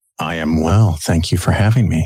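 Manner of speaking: silky, sexy, low, sultry smooth voice. A new guest thanking the hosts for having him on the show, sultry, smooth voice. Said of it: "listen to that sultry, sexy, smooth voice".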